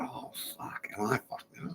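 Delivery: sheepish, hushed near-whisper, sounding caught out. Imagining Richard Dawkins being called up: imitating Richard Dawkins sounding sheepish. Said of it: "he's a bit sheepish. He's, he's feeling a bit sheepish".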